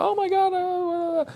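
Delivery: high, loud, gasping mock panic. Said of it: "Some people hear the word object and they're like".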